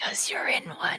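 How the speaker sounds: hushed, whispered voice. Right next to the other person, speaking over their shoulder, whispering. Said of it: "Why are you whispering over my shoulder?".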